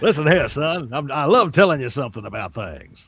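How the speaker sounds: loud, belted cartoon character voice. Answering a listener's question about an earlier impression: Foghorn Leghorn voice. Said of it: "like a cross between Foghorn Leghorn and Snagglepuss".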